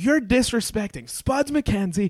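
high-pitched, angry screaming. Retelling how a drunk date screamed at them: imitating a woman screaming. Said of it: "she's screaming at me".

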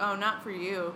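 plain

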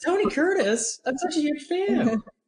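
terrible, very high, slow voice. Acting out a brief movie moment: terrible Mia Farrow impression. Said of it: "that was a terrible Mia Farrow impression".

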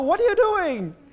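shrill, loud, high Italian accent. Speaker reading a line aloud the Singaporean way, slipping into an Italian accent. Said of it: "I don't know why I went Italian at the end there".

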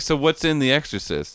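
usual speaking voice

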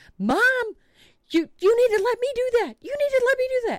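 shrill, insistent shout, very high and loud. Retelling the daughter outside the garage: imitating someone yelling. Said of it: "my daughter is outside of the garage yelling".

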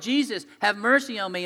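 acted-out, yelled, begging, pleading cry. Retelling a blind man calling out through a crowd: retelling a blind man yelling. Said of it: "he's just yelling".

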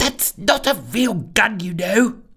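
annoyed whisper. Narrator reading a sister trailing behind her brother, whispering crossly. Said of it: "whispered his sister crossly".

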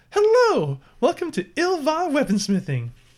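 very high, bright, cheery sing-song voice. Voicing a halfling shopkeeper greeting customers: cheery halfling shopkeeper greeting. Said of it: "she gives you all a cheery".

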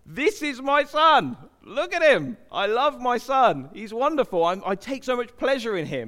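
loud, thundering, booming, godlike bellow. Retelling Jesus's baptism, the voice from heaven, bellowing voice of God the Father. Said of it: "a voice that bellows out".

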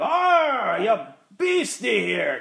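loud, thick, hammed-up mock Scottish brogue.

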